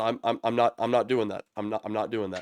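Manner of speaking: panicked, freaked-out babbling with stammering repeats. A student character refuses before a corpse, freaking out. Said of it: "the student starts freaking out".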